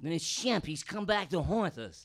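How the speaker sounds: very loud, high, dopey, dim-witted yelling voice. Acting out a Three Stooges bit: stupid Larry voice. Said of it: "You could say anything in that stupid voice".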